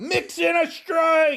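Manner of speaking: loud high yelling, stretched out.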